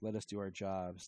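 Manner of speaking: ordinary talk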